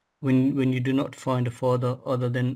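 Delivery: plain reading voice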